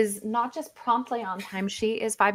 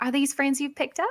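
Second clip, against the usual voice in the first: put-on Chiltern accent voice, quieter; 3 semitones higher, 4 dB quieter than usual. Voicing a character who asks about new friends: put-on Chiltern accent. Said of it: "that's just the Chiltern accent".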